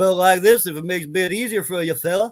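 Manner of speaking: put-on Indian accent, high-pitched. Switching accents so the listener understands better, in a put-on Indian accent. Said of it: "my Indian is more understandable than my Scottish".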